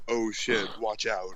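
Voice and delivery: flat monotone delivery.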